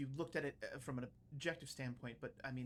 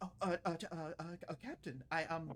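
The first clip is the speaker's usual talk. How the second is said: flustered, trembling ensign voice, higher pitch; 3 semitones higher, 4 dB louder than usual. Voicing an ensign who almost drops a tray: nervous, shaking ensign. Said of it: "I'm shaking".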